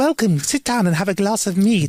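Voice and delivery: put-on kindly old-mother voice. Imagining who runs a place called Chicken Cottage, imitating a friendly old mother. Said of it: "really nice, friendly, like old mother in there being like".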